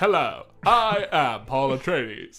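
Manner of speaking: booming, drawn-out bad voice, slow. Joking about voicing over a film, doing a bad Matt Berry impression. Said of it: "just my bad Matt Berry of".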